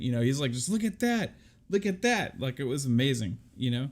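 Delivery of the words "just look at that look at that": put-on high, excited, awed kid voice. Retelling a panelist's reaction to a game reveal: imitating Pong Soul's excited kid voice. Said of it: "like a ten-year-old that just, like, went to the zoo for the first time".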